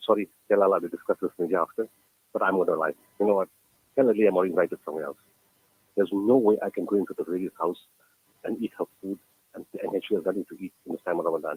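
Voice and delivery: ordinary talk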